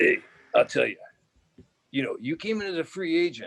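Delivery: high voice from a damaged throat. Retelling what his line coach said after the season: imitating Dick Stanfield's damaged voice. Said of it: "he talked like this 'cause he got kicked in the throat and he tore his larynx".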